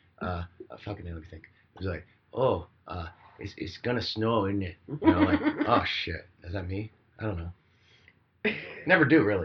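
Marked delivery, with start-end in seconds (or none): 2.3-4.8 put-on Midwestern accent, slower. Recalling living in Wisconsin, the speaker quotes themselves in a Midwestern accent. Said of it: "picking out the Midwestern thing".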